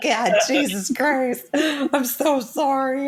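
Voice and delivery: mock bawling while talking. Acting out crying in front of a ghost in an imagined scene: mock bawling. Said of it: "bawling my eyes out".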